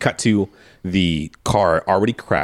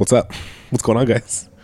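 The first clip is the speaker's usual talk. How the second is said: put-on unbothered, super calm, casual, easygoing delivery; 3 semitones higher than usual. Retelling a movie scene where a character walks over to bloody guys: imitating a super calm tone. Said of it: "just super calmly".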